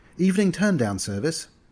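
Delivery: cheerful, bright voice. A woman knocks on a suite door and a gruff voice answers; chipper. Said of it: "she announced with a chipper voice".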